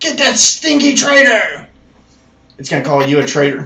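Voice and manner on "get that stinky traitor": very high, shrill, screeching goblin shout. Narrating a fantasy game, voicing a goblin at a kobold: yelling goblin voice. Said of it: "As it yells out".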